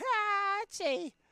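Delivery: shrill voice pushed very high and loud. Trying out a voice for a character, pushed higher: Fran Drescher voice. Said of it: "the Fran Drescher of it".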